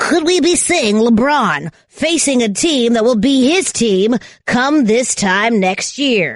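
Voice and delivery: put-on broadcast announcer voice. A co-host throws out a question to the other, in an announcer voice. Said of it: "needed the voice for that".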